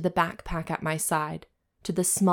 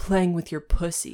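aggressive, forceful voice. Turning down an offer of s'mores; aggressive voice. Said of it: "Your voice is so aggressive".

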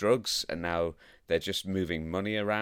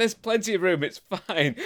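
acted-out yelling, much higher; 12 semitones higher, 5 dB louder than usual. Recounting a movie car chase, quoting the driver, retelling a yell back. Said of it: "Riggs is yelling back".

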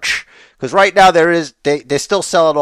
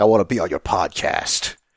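hushed, breathy whisper in a put-on voice; 7 semitones lower, 6 dB quieter than usual. Imagining Batista asking to be on the podcast, Batista voice. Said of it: "That's how he sounds like. I have a bad Batista impression".

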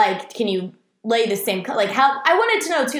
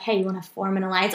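soft, hushed sideways half-whisper; 4 semitones lower, 5 dB quieter than usual. Retelling what they said to a guy at an Uno game, half-whispered. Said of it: "So I whispered".

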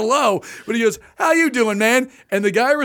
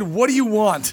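put-on rude, curt voice. Retelling a drive-thru speaker greeting: imitating a rude clerk. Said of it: "He says it like that".

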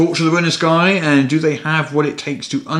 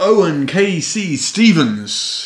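put-on boxing ring announcer voice; 3 semitones higher than usual. A host announces next week's special guest in a boxing announcer voice. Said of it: "I'm still doing the boxing announcer voice".

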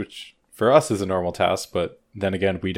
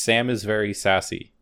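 ordinary talk

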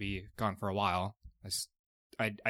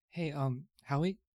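hushed whispering voice, higher pitch; 7 semitones higher than usual. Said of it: "can I whisper to him".

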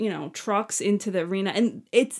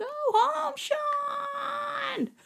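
very high, shrill, nonstop screaming with one word drawn out; 5 dB quieter than usual. Retelling how an angry woman yelled at Shawn, retelling her angry screaming. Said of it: "just screaming the whole time".

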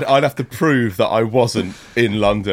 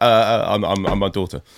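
normal talking voice

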